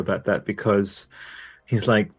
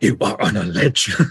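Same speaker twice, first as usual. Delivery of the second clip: slow, stern, fussing villain-style voice; 3 dB louder than usual. Imitating a friend scolding a character on a ledge: Heath Ledger Joker voice. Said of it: "she goes into Heath Ledger Joker voice".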